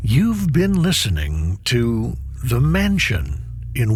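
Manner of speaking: ordinary delivery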